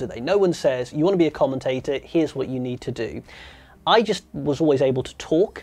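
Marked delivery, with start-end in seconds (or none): none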